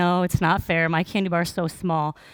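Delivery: ordinary talk, nothing marked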